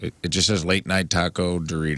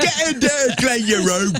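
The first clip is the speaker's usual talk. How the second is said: very high, loud, shrill Cockney accent; 5 dB louder than usual. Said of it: "Cockney, right? / you can't be like".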